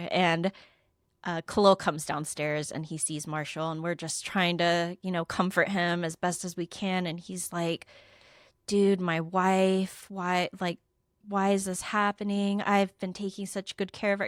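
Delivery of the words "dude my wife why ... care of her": mock crying, distraught, sobbing. The speaker retells a distraught man's words while they comfort him, imitating distraught crying. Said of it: "He is distraught and crying".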